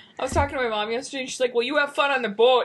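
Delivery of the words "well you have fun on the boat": put-on Minnesota accent. Quoting what their mom said yesterday, in a Minnesotan accent. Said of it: "whoa, Minnesota".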